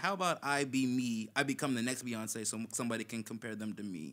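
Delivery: ordinary talk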